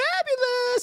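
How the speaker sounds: exaggerated, very high, camp fabulous voice. Recounting saying a cruise would be fabulous, in the gayest voice he can muster. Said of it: "in the gayest voice I can mu- muster".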